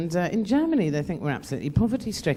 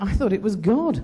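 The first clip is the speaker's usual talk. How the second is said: ordinary talk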